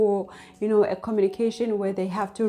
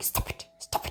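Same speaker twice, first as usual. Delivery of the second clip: hushed, whispered, controlled scolding tone. Describing parents who scold their kids at the mall, the speaker mimics them, imitating a whispered scolding. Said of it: "they're like whispering like".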